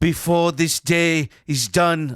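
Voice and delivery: put-on high, loud, slow East German accent. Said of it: "'cause he's got a East German accent".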